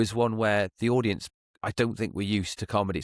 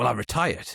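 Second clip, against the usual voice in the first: put-on curt, snippy tone. Retelling a guest's answer about her job: imitating a curt tone. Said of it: "like, with a tone".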